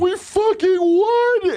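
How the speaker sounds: very high blubbering sob, drawn out. Retelling fans celebrating a win: imitating a crying grown man. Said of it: "grown men crying".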